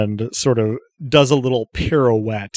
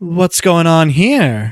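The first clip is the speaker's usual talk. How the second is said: velvety, effortlessly silky smooth voice, pitched up; 6 semitones higher, 6 dB louder than usual. Voicing an android entering and asking what's happening: very smooth voice. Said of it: "smoother than my vocal cords will be able to manage voice".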